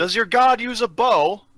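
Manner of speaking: shrill, very high, very loud yell. In a role-play, a character yells to the elf: yelling. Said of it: "Anna yells to".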